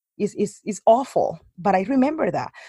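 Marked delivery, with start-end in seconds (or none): none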